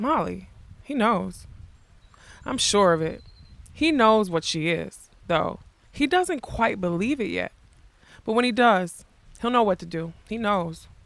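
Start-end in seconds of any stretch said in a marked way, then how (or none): none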